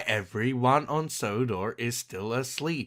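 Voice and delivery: put-on robotic AI voice. Mocking a line from the show for sounding like an AI: imitating a robotic AI voice. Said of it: "why is he saying this like a, like an A I?".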